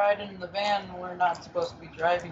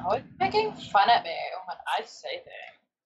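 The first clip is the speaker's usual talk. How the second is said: put-on, animated, swooping way of talking. Doing an impression of her for the others: impression of her. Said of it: "I'm doing an impression".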